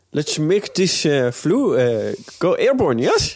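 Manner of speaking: put-on Dutch accent. Taking up the challenge to try a dutch accent, in a dutch accent. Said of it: "Do you want to try? Do you think you can?".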